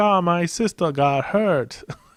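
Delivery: bad put-on Chinese accent, slow and high. Mocking the plot of Jackie Chan movies, in a terrible Jackie Chan Chinese voice. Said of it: "I put on some Chinese voice right there".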